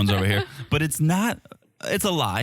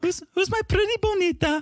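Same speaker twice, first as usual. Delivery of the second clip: put-on high-pitched baby talk. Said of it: "They call it the baby talk".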